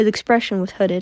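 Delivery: ordinary delivery, nothing marked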